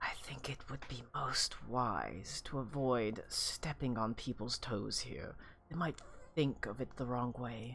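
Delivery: very soft, airy, barely-there, wisp-like voice. Narrator voicing a very strong woman character's reply, in a wisp-like soft voice. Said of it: "In a very almost wisp-like soft voice".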